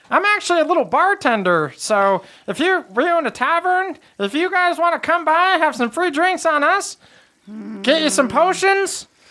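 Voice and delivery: tiny, very high little gnome voice. Narrating a gnome bartender inviting the group to his tavern; hipster gnome voice. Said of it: "He's almost like a little hipster gnome".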